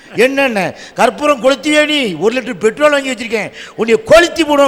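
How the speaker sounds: ordinary talk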